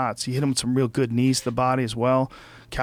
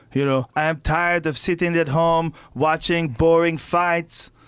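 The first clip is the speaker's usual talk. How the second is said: clumsy, bad put-on French-Canadian accent; 4 semitones higher than usual. Imitating a fighter calling for a pro wrestling angle: bad GSP impression. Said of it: "That was a bad G S P impression".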